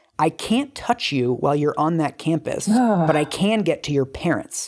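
put-on whisper. Retelling how a stranger threatened someone: retelling a whispered threat. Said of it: "he whispers in her ear".

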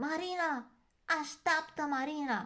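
very high, loud shouted voice. A little bear calls after someone walking with lanterns; shouting. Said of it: "a strigat ursulețul".

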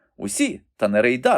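sudden, blurted, cried-out exclamation. A pupil cuts in after the teacher answers a classmate, exclaimed. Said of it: "вигукнув пер Еспен".

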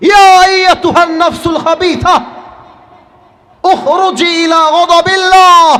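high, loud, terrifying bellowing shout.

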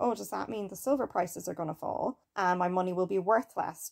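ordinary talk

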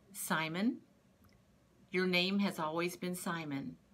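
usual speaking voice

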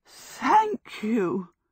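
out of breath. After Michael drags her stuck boot off, Sophie speaks, breathless. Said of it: "Sophie cried breathlessly".

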